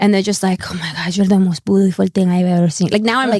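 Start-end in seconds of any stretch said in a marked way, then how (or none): 0.7-2.9 put-on Argentinian accent. Imitating how Argentinian men flirt: imitating an Argentinian accent. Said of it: "I love that accent".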